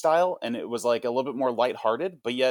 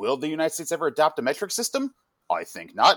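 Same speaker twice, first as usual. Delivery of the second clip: put-on cartoon announcer voice, higher; 3 semitones higher than usual. Recalling a cartoon's announcer before commercial breaks, imitating a cartoon TV announcer. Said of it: "And they'd be like".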